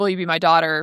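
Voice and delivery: ordinary talk, nothing marked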